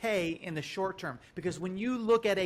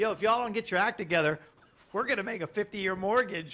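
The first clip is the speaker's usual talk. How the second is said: teasing, goading, taunting tone. Voicing how he is taunting the feds: imitating someone taunting. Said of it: "he's taunting the feds".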